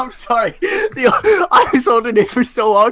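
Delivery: high, loud laughing and giggling fit.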